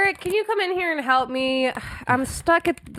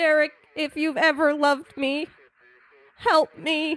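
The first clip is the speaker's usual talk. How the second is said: stressed, robotic-sounding voice. Pleading with derek for help: stressed, robotic-sounding voice. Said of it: "Why are you sounding more robotic the more stressed you get?".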